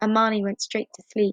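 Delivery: ordinary delivery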